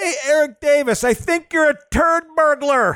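play-acted, very high, loud jeering yell. Retelling a fan in the bleachers heckling a player: imitating a fan yelling. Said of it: "just yelling".

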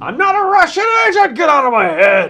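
wild, swooping, shrill scream, very high and very loud. Imagining going full Alex Jones: screaming Alex Jones impression.

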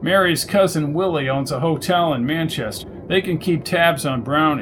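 plain

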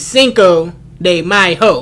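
slowed down, every syllable drawn out and deliberate. Joking that people say cinco de mayo too fast, slowed down. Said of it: "You gotta slow it down a little bit".

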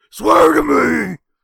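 rough, very loud, hard growl. During the show intro, a host delivers a line as a Batman impression. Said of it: "your impression".

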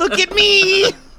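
put-on screaming cartoon voice. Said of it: "people screaming absurd things".

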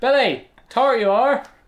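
put-on Southwestern or West Country accent. Scolding the cat Billy: put-on Southwestern accent. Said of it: "never got wind of the Southwestern accent, but".

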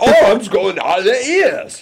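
squeaky, very high, put-on British accent. Offering to do an accent for the others, british accent. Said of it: "Should I do a British one?".

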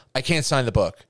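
mock flat, blunt tone. Retelling a scene from a story, quoting a woman's flat refusal. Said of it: "she says that like flat out".

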